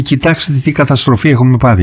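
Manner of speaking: ordinary talk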